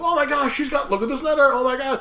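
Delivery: high, breathless, panicked freak-out. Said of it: "everyone starts freaking out".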